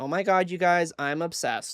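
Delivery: put-on gushing influencer voice. Showing off a steelbook's artwork: imitating an influencer gushing. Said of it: "I'm gonna do, like, the influencer".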